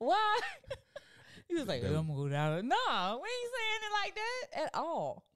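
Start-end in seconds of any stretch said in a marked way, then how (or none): 1.8-2.7 mock deep voice, much lower, faster. Mocking how a man talks, imitating a deep voice. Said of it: "have that deep ass voice though?".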